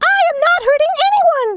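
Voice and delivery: very high, tiny, squeaking mouse voice. Reading a Raggedy Ann story, the tiny mouse answers her: squeaky little mouse voice. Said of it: "squeaked the little mouse".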